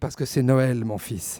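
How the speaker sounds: touched and tender. Acting out a father answering his crying question from his kid: tender, moved. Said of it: "tu réponds attendri".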